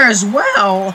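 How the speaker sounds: loud voice crack upward. Calling a strikeout during a baseball broadcast, voice cracking. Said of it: "Sorry for that voice crack there".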